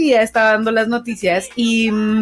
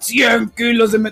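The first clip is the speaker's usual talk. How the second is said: put-on, horrible, demonic possessed-style voice. Retelling a newsreader choking mid-report: imitating Lolita Ayala's exorcist voice. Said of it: "le sale una voz así de, de exorcista".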